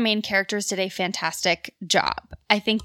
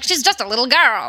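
put-on campy old-movie transatlantic policeman accent; 3 semitones higher, 4 dB louder than usual. Describing a film's first scene, quoting the cop: campy transatlantic cop accent. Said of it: "transatlantic, like camp, like cop accent".

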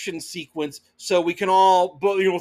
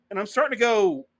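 ordinary talk, nothing marked

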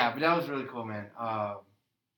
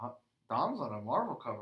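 put-on very mild surprise, sing-song reaction. Retelling how someone reacted to big news: imitating Hunter's very mild reaction. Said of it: "in the most mild way ever".

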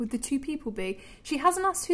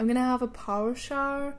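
Northern Irish pronunciation throughout. Practising how they say phrases, the speaker says a sentence in a northern irish accent. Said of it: "Because I'm from Northern Ireland".

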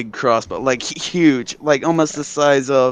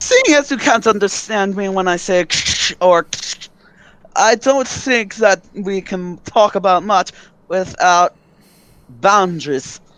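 sly, pitched-up dark elf man character voice; 6 semitones higher than usual. A drow elf man tells an opponent to step down; drow elf man voice. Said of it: "And then there is a drow elf man hunch over a dwarvish body".

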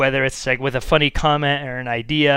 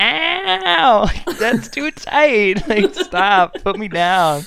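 high, slow, drawn-out "ow"; 7 semitones higher, 4 dB louder than usual. Retelling the scene where the little girl grabs Sassy: imitating Sassy the cat. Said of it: "the little girl, like, grabs Sassy, and she's like".

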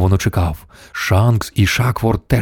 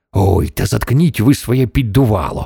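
plain reading voice

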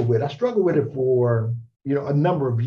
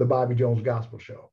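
usual speaking voice

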